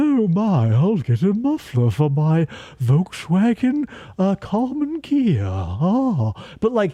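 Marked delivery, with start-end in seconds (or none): 0.0-5.4 slow, drawn-out, spooky horror voice. Showing how easy he is to reproduce compared with Bela Lugosi, Karloff voice. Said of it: "Karloff here is so easy to reproduce. You just go".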